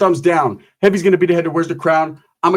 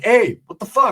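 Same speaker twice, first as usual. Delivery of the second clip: acted angry outburst, higher pitch; 4 semitones higher than usual. Retelling jumping up after a friend got hit: imitating own angry outburst. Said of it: "Now I'm mad".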